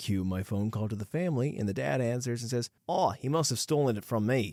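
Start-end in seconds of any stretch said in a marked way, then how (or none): 2.9-4.5 put-on Australian accent, higher pitch. Retelling a phone call, quoting the dad who answers, australian accent. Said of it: "that Australian accent was great on the fly".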